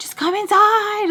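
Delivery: urgent, high, drawn-out pleading call, climbing each phrase. Retelling someone calling the crying babies inside: imitating someone screaming really loud. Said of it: "screaming really loud".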